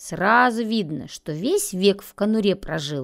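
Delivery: plain reading voice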